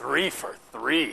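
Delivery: creepiest possible put-on voice. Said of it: "creepiest voice possible".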